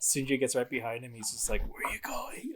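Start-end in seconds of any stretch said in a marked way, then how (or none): 1.6-2.5 very high-pitched, creeping, sneaky whisper. Retelling a game scene where Sindri sneaks up behind someone: imitating Sindri whispering. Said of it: "he whispers it".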